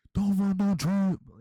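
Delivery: slow, high-pitched, loud mock yell.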